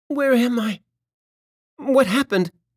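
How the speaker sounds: tiny, frightened, scared voice, pitched high. Waking in bed, the creature asks what happened, in a small, scared voice. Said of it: "Her voice was small and scared".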